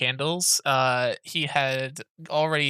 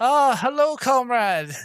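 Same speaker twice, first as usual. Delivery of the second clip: overjoyed dwarf voice, higher, louder, slower; 11 semitones higher, 6 dB louder than usual. Game master voices a dwarf shopkeeper greeting a dwarf customer: happy dwarf shopkeeper greeting. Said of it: "She's like so happy to see another dwarf".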